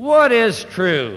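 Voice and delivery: mock weary, scornful sarcasm, loud, swooping. Retelling Pilate questioning his prisoner: acting Pilate's weary contemptuous sarcasm. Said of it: "in a kind of a weary voice, tinged with a kind of a contemptuous sarcasm".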